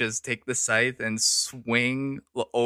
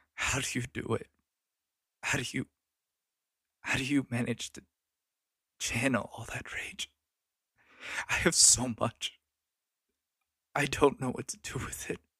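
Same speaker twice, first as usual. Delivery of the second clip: soft quiet sobbing, quieter; 6 dB quieter than usual. In a role-play, speaking as a character to another character, quietly sobbing. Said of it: "I like quietly, like, sort of sob".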